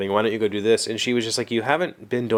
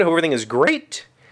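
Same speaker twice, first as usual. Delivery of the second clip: cracking, breaking voice, going up high; 6 semitones higher than usual. Greeting viewers at the start of a video, voice cracking. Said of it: "My voice just cracked".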